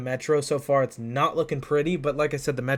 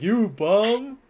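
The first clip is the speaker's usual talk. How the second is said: high, jeering, heckling trash talk; 8 semitones higher, 4 dB louder than usual. Teasing another speaker, imitating a bench trash talker. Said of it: "He's like".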